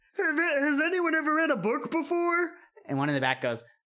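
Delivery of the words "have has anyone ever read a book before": very high-pitched yelled frog voice. Voicing a frog in a game, yelling a question: frog yelling. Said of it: "one of them yells".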